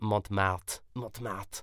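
Montmartre pronounced in a strongly French way. Naming a neighborhood in Paris: very French pronunciation. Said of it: "I'm gonna say it very French".

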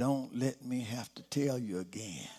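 quiet, chilling half-whisper under the breath. Quoting a soft-spoken father's warning to the children: imitating father's half-whisper. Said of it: "in his whispering voice".

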